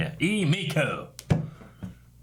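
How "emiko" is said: southern accent with drawled vowels. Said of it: "We'll call her that".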